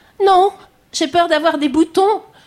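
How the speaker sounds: put-on tiny, very high little girl's voice. Retelling what a girl answered when asked if she feared a baby: imitating a girl's small voice. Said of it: "avec sa petite voix".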